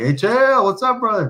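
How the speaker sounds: acted very high, shouted voice. Retelling a greeting called to a fighter while leaving the cage: imitating own yell. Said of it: "and I just yelled at him".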